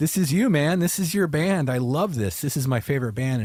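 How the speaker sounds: teasing, sarcastic tone. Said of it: "he says it kind of sarcastically".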